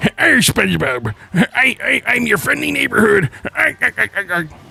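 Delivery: gruff, rasping, high cartoon crab voice swooping way up. Joking that he shows up in Beyond the Spider-Verse, Mr. Krabs impression. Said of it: "That's my best mister Krabs impression".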